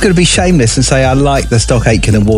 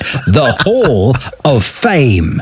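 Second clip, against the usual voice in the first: very slow, proper, drawn-out radio DJ announcer voice. Radio presenter introducing the new hall of fame feature in a proper dj voice. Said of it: "a proper voice for you there".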